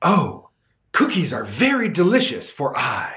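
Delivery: snooty superior tone. Speaker demonstrates using I in the object position, in a snobbish voice. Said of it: "sound like a cave person or a snob".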